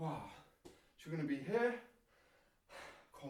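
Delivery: breathless, soft panting speech between words. Demonstrating burpees for viewers, pausing mid-exercise, out of breath. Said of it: "let me catch my breath back".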